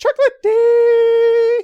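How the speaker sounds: very high, very loud, shrill, dopey voice. Recalling a nickname they always said in the stupidest possible voice. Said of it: "we would always say it in the stupidest voice we could, like this".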